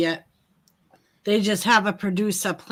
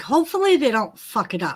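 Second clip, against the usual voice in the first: normal talking voice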